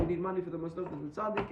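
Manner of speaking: plain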